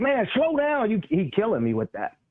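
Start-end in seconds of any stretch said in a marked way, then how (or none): 0.0-0.9 mock, very high-pitched, exasperated scream. Describing watching Julius play, retelling screaming at the TV. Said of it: "I'm screaming at the T V like".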